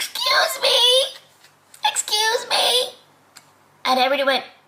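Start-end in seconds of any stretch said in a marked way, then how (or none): 0.0-2.9 very high, tiny, slow squeaking voice. Telling a joke about body parts arguing, tiny squeaky voice. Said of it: "a tiny little voice squeak from down below".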